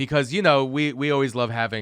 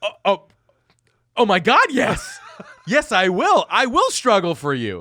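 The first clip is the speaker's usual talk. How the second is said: put-on very high, loud, showy flamboyant lilt; 9 semitones higher, 6 dB louder than usual. Retelling own reply when asked to reach a shelf: flamboyant put-on inflection. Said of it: "do you say it in that inflection like that?".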